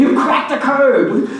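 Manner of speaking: sunny, upbeat, cheerful, smiley voice. Retelling what a man said to them, retelling a smiley delivery. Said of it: "But he said it really smiley".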